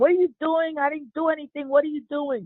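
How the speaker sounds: high, shrieking scream. Retelling a man's words as police grabbed him: imitating someone screaming. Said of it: "he started screaming, saying".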